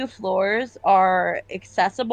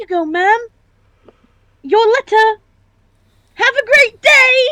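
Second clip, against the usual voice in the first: put-on very high, very loud little boy voice; 14 semitones higher, 9 dB louder than usual. Playing a character in a comic scene with other performers, in a little boy voice. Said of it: "I can do little boy voices".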